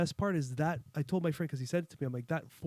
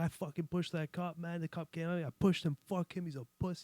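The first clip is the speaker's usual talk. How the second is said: swaggering, boastful tough-guy voice; 4 dB quieter than usual. Retelling a video of a man bragging on the phone: imitating a tough guy act. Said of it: "this tough guy act".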